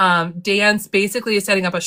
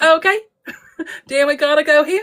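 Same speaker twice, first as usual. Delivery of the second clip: put-on New Zealand-accented voice. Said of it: "It is that voice".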